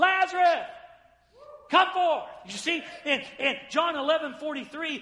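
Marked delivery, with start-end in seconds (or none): 0.0-2.2 loud, authoritative, commanding shout. Showing what the Lord's commanding shout sounds like, a commanding shout. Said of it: "a commanding shout. And you say, what does that sound like? It sounds like this".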